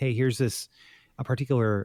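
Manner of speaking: ordinary delivery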